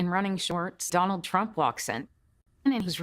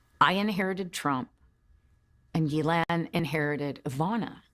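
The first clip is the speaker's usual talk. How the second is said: plain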